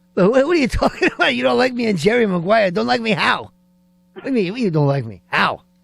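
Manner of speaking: pushy, badgering put-on character voice. Reenacting a movie scene with a caller: Joe Pesci Goodfellas voice. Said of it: "I'll do Pesci".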